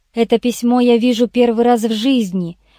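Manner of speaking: plain reading voice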